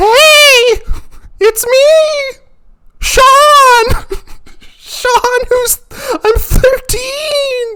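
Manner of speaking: put-on very high, very slow young teen voice. The speaker imitates how he sounded at thirteen, for viewers. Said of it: "I sounded a little something like this".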